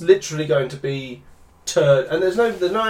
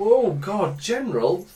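recoiling, grossed-out groan with raised pitch; 5 semitones higher than usual. Retelling how Leia leans away from General Solo: imitating Leia recoiling in disgust. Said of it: "She kind of does that".

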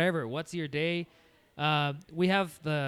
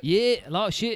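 loud, put-on, fake Australian accent; 4 semitones higher, 5 dB louder than usual. Riffing on accents with friends, the speaker answers in an australian accent. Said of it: "Is that Australian?".

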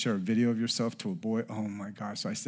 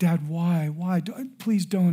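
mock tearful begging through sobs, high, loud; 8 semitones higher, 7 dB louder than usual. Father retelling his daughter begging him, imitating her crying. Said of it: "And she's crying".

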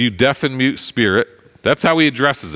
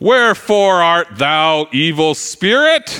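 slow, stretched scripture-like delivery; 6 semitones higher, 3 dB louder than usual. Imitating how people speak to a demon: King James Bible voice. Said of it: "in the King James version only voice".

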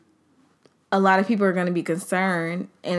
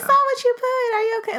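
high, concerned, sympathetic voice. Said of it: "people are like".

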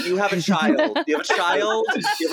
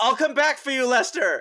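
high, shouted yell in a character voice; 5 semitones higher than usual. Playing a character escaping out a window, yelling in character. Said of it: "I yell".

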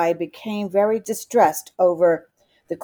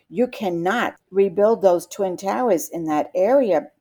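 ordinary delivery

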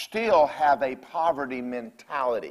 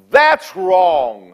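very loud, full-throated, booming bellow; 3 semitones higher, 9 dB louder than usual. Retelling hollering alone in the car on hearing the news: bellowing scream. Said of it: "I just screamed. I bellowed out".

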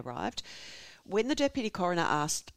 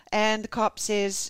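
ordinary talk

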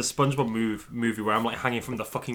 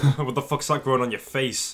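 aggressive, hostile, confrontational delivery in a put-on voice. Confronting a guy in character at the tavern: aggressive in character. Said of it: "Why is Ned so aggressive?".

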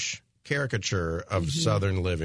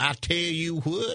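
very slow, drawled, put-on Southern twang; 8 semitones higher than usual. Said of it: "not the twang".

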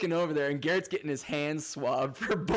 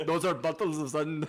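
fake, vaguely Indian accent. Joking about being stopped with bottles of sand, the speaker uses a fake, almost-Indian accent. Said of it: "What the fuck accent is that?".

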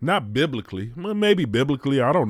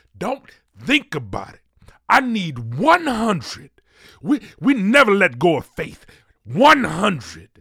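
put-on, high, preachy TV preacher delivery; 6 semitones higher, 3 dB louder than usual. Podcast host asking listeners to support the stories, televangelist voice. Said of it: "This is my televangelist voice".

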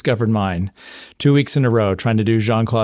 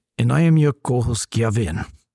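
bad, fake, put-on French accent. Co-host introducing himself on a martial arts podcast, in a bad French accent. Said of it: "I'm hoping that wasn't supposed to be French".

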